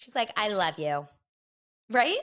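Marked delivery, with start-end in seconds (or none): 0.4-1.1 deadpan, flat, level monotone with no lift. Imitating a reality show contestant who sounds monotone: imitating Bliss's monotone. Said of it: "I sound just like her".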